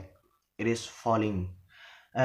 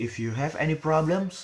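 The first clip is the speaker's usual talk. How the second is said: rising intonation on the word "problems"; 5 semitones higher than usual. Intonation lesson on a conditional sentence, rising intonation on problems. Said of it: "so the word problem is rising".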